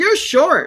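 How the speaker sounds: gleeful, delighted, very high blurt. Retelling what Kevin said on first meeting: imitating Kevin's delighted tone. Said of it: "He said it just like that".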